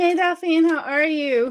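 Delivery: breathless, between breaths. Greeting someone after hurrying upstairs to fetch something, out of breath. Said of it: "I'm just catching my breath".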